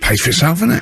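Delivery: acted sarcastic tone. Retelling their reply to Johnny, retelling a sarcastic remark. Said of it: "I was sort of being sarcastic".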